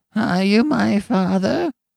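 put-on very high, cracked, ancient old man's voice. Narrator voices an old man in a crib addressing the new father: cracked, ancient voice. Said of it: "spoke in a cracked and ancient voice".

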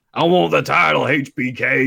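put-on very slow, drawled American backwoods hillbilly accent. Quoting a cartoon voice line: Bret Hart's American hillbilly voice. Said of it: "why are you talking like an American, like, hillbilly type".

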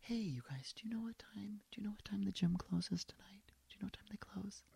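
very quiet, hushed whisper. Retelling asking loud people in a steam room a question, imitating own whisper. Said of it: "if I'm whispering".

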